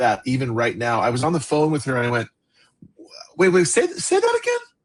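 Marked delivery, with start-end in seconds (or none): 3.4-4.6 voice jumping up very high. Retelling a phone call, asking her to say it again, retelling voice jumping three octaves. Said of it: "my voice went, you know, like three octaves up".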